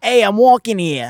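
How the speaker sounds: loud Brooklyn-accented goblin voice. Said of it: "I always get into the voice".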